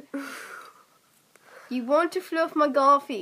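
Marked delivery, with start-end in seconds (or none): 1.7-3.2 put-on East London Cockney accent. Saying a line for others to guess the accent, in a cockney accent.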